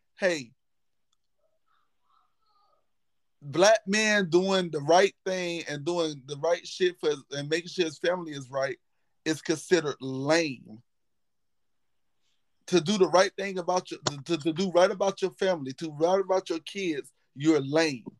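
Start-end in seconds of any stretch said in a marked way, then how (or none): none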